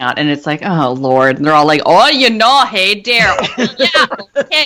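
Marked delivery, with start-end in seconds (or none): 1.8-4.7 really bad Wisconsin accent, slow and high-pitched. Imitating the townspeople interviewed in a documentary, in a really bad Wisconsin accent. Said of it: "Wisconsin accents".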